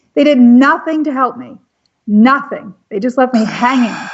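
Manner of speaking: on the verge of tears. Speaker recounting how nobody helped when archivists came after them; teary voice. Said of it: "I'm getting teary thinking of this".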